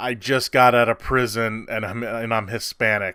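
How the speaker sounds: ordinary delivery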